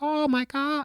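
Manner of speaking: very high-pitched character voice. Answering a chat request for a quick Morty impression. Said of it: "Do a Morty impression".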